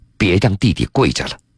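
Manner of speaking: ordinary talk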